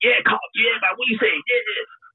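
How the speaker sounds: very high, patronising street slang chatter. Imitating people who talk down to him with slang: imitating patronising slang talk. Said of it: "Why are you talking to me like that?".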